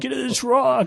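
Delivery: shrieking, very high, shrill scream. Telling a funny story, the speaker imitates everybody screaming. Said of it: "everybody's screaming".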